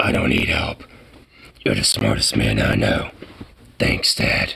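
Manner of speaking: very low, gravelly, gruff voice. Complaining that everyone sounds the same, performing a quoted line in Clint Eastwood gruff voice. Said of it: "a fucking hella gruff voice".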